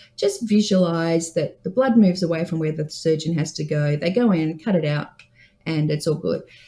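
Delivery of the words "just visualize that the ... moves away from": plain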